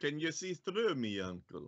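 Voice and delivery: put-on terrible Russian accent. Telling a story about an uncle bringing cookies, speaking to the uncle in a terrible russian accent. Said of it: "if I'm doing a terrible Russian accent".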